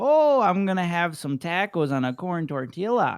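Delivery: exaggerated Midwestern accent, loud and high. Joking about regional accents, imitating someone from the Midwest in a mock Midwest accent. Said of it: "someone from like the Midwest is like".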